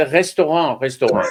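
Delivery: put-on heavy, thick French accent, laid on thick. Retelling a man asking them to do a restaurant; thick French accent. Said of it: "in this really thick French accent".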